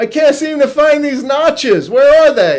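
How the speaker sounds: loud high-pitched yell.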